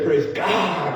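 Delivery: put-on American accent, a different voice. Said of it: "put a, an American accent on".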